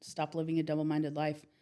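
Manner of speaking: ordinary talk, nothing marked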